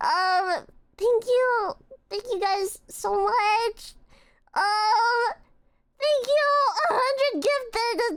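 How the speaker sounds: crying, tearful, high-pitched voice. Thanking the watching friends for a hundred gifted: tearful thanks. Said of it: "don't don't look at me crying".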